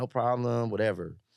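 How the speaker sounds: normal talking voice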